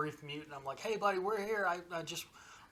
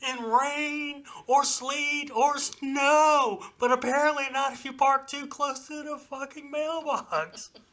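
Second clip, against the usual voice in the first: mock very high, very loud, shrill in-your-face rant; 10 semitones higher, 8 dB louder than usual. Telling a story about Mike and a guy, retelling Mike getting in his face. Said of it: "gets up in his face and says".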